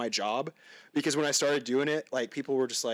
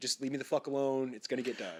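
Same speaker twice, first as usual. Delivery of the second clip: acted-out irritated, frustrated, fed-up tone; 5 dB quieter than usual. Retelling own reply when asked to do something: imitating frustrated reply. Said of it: "I'm either frustrated".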